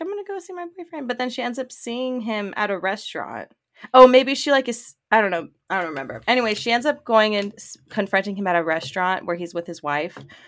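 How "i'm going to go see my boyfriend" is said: high, fast, breezy, rattled off dismissively. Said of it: "But she's like".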